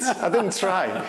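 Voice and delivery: put-on Scouse accent. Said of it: "in his Scouse accent".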